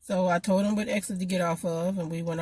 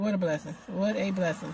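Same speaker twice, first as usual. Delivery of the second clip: usual speaking voice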